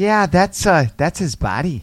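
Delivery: put-on very slow, drawn-out valley girl drawl. Retelling how someone on the news confirmed the body: valley girl voice. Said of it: "some fucking valley girl was like".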